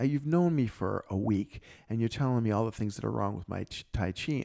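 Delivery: ordinary talk, nothing marked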